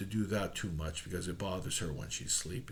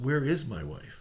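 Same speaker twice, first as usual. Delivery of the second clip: ordinary delivery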